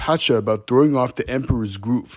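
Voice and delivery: ordinary talk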